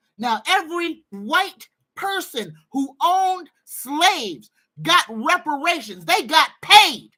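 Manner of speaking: all-out yelling. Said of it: "And I'm yelling".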